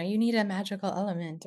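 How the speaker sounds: ordinary talk, nothing marked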